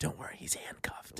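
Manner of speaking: very quiet, hushed, breathy whisper. Retelling what a nurse said when she came over; retelling a nurse's whisper. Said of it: "She whispers to me".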